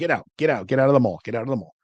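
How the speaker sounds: insistent, urgent, repeated, screaming delivery. Retelling how the group screamed at people to leave the mall: retelling a scream. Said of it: "we're screaming at them".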